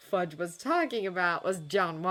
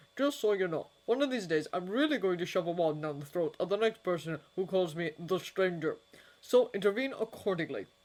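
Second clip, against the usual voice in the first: ordinary delivery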